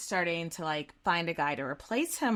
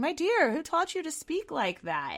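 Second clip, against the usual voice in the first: put-on condescending tone, swooping and pitched up; 10 semitones higher than usual. Retelling the Grand Vizier's reply to the young sultan: imitating a condescending tone. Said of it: "but it's just very condescending".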